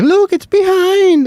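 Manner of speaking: put-on high, slow, scared kid voices calling out.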